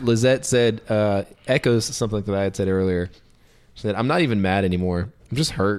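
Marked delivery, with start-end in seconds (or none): none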